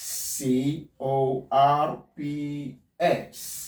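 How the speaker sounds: very slow, spelled out letter by letter. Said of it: "Let's consider this word".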